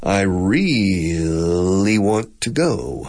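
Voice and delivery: very slow, every syllable stretched out. Explaining that english lengthens syllables, the speaker demonstrates: lengthened drawn-out syllables. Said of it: "We lengthen syllables".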